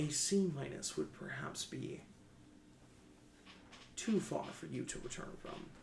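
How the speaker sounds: put-on sarcasm, swooping sing-song. Voicing an artificial character answering the player, trying to sound sarcastic. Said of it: "I'm trying to be sarcastic".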